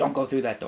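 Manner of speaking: normal talking voice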